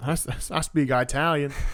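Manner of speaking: southern drawl, words stretched out. Retelling a character's answer while recapping a story: southern accent. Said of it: "still with the southern accent".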